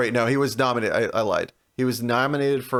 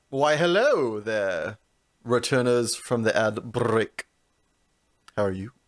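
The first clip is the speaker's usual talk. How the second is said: put-on Transylvanian accent. Welcoming listeners back from the ad break in a mock Transylvanian accent. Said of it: "you sounded like you were going for Dracula".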